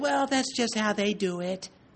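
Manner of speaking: airheaded, ditzy little put-on voice. Speaker mocking the kind of pastor who shrugs things off: little ditzy voice. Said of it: "in some little ditzy voice".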